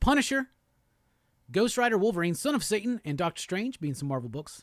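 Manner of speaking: ordinary talk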